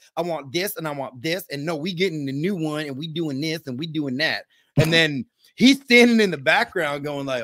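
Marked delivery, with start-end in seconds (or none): 0.2-4.5 put-on sassy, demanding woman's voice, rattled off. Retelling a customer's demands during a home visit: imitating a sassy woman. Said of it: "she's all sassy".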